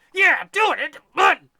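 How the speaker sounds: very high, very loud, shrill urging yell. Speaker describes the inner voice that urges them on: acting out a yelling inner voice. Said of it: "this son of a bitch over here is yelling".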